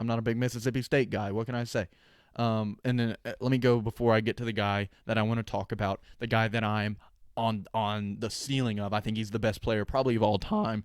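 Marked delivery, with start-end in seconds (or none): 8.9-10.8 voice cracks mid-sentence. A speaker names the player he thinks is the best of all time, voice cracking. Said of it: "voice crack right there".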